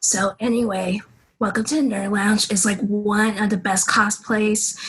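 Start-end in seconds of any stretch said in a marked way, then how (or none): 1.4-4.9 anime-style character voice. A cosplayer, offered the chance, demonstrates an anime voice. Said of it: "you want to hear my anime voice though".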